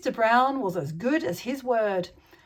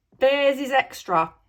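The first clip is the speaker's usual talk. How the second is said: gruff, growled voice; 3 dB louder than usual. Reading a story aloud, the narrator voices the taxi driver: growled. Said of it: "he growled".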